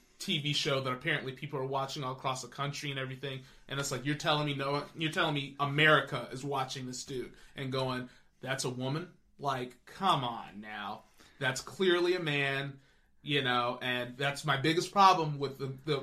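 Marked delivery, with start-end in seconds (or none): none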